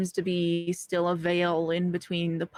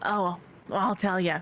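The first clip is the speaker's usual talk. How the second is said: put-on Southern drawl accent. Voicing a character who agrees to tell his story: southern drawl. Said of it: "He's Southern".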